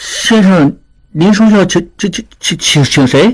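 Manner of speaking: halting, stammered, very slow delivery. A narrator voices the waiter's startled question, stammering. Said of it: "结巴着问".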